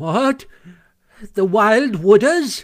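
high, loud, trembling cry. Toad responds to talk of the stoats and weasels, crying out, trembling. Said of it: "cried Toad, trembling in every limb".

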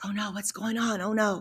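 quiet, soft, hushed half-whisper. Retelling the reaction when a runner lay on a cot: imitating a half-whisper. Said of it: "we're all over there whispering like".

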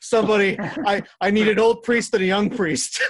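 very high, very loud blurted outburst. Retelling a favorite movie gag where the chair freaks out: imitating Doctor Evil blurting out. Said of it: "he blurts out".

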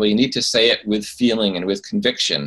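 ordinary delivery

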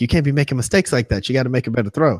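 put-on coach yelling. Retelling how the coach yelled at a player: imitating a coach yelling. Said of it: "starts yelling at him like".

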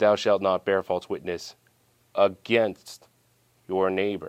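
usual speaking voice

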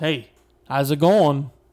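put-on Boston accent, a bit loud. Retelling being greeted from a golf cart at Sony, Liev Schreiber Boston accent. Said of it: "in his Boston accent".

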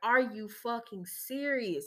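acted laughing while crying. Retelling being caught off guard in the video, laughing while crying. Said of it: "I started laughing, but I was crying at the same time".

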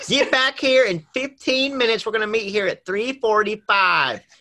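mock-shouting, high-pitched holler in Southern accent. Retelling a friend's recurring bit, mock-shouting like a southern mom. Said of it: "shouting like this like Southern mom".

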